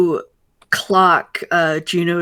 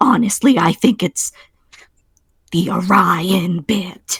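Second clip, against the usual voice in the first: mock very hushed whisper. Acting out a woman leaning in for gossip, in a mock very hushed whisper. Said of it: "very hushed whisper".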